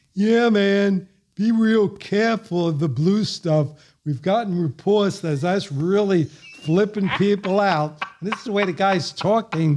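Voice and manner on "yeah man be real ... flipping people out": put-on high-pitched hippie accent, announcer-style. Recalling a stage announcement at Woodstock, speaker imitates the announcer's hippie accent. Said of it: "with that hippie accent".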